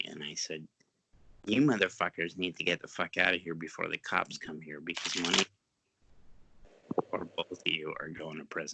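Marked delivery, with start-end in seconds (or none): none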